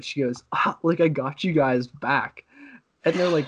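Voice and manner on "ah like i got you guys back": put-on laughter, cracking up, much slower. Retelling what she told everyone after the prank, imitating her cracking up laughing. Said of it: "she's sitting there just cracking up laughing".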